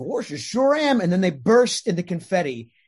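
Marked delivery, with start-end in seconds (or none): 0.0-1.0 silly, pitched-up cartoon dog voice. Retelling how Bill answers people asking if he's Goofy, in Goofy voice. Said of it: "just doing that voice".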